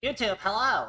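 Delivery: goofy, silly, high-pitched made-up put-on voice. Greeting youtube viewers at the start of a video: put-on voice. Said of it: "I don't know why I decided to do that voice".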